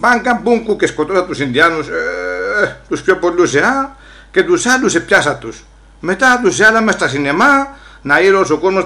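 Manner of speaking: ordinary talk, nothing marked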